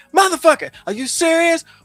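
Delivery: acted-out shouting. Retelling what they yelled at a book during a pivotal scene, retelling a shout at a book. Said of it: "I started shouting at this book".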